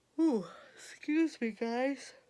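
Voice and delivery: very high voice, yawning through the words. Talking to viewers while working on art stuff, yawning. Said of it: "I'm yawning".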